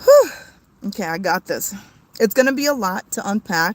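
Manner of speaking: overcome voice, collecting composure after crying. Trying to talk about this level-headed, emotional. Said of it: "I'm really emotional".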